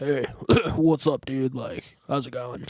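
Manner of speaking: fake tough-guy voice, put-on and pushed deep. Speaker recalls talking with the boys in middle school, retelling a put-on lower voice. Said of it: "I tried to make my voice sound lower than it was".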